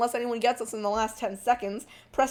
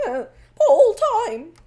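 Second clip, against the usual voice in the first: voice cracks, much higher pitch and louder; 10 semitones higher, 10 dB louder than usual. Announcing a pole time just set, voice cracking. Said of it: "Voice crack there".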